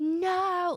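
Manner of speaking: mock long, drawn-out, very high-pitched scream. Telling a story, the speaker acts out Amar jumping up; retelling Amar's scream. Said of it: "start screaming from the bottom of his lungs".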